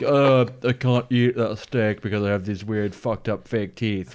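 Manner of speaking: scoffing, derisive mock put-on voice. Acting out a wannabe vampire complaining about his fake teeth: mocking a wannabe vampire.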